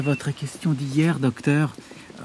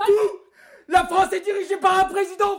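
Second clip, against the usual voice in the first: very high-pitched, agitated, worked-up outburst. In a drama, Paul bursts out before being begged to calm down; agitated outburst.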